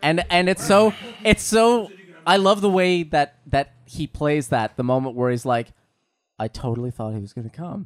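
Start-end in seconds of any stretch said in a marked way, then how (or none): 6.4-7.9 mock disappointed, bummed tone. Imitating how an actor plays a disappointed moment in a scene: imitating someone bummed. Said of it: "he's so bummed".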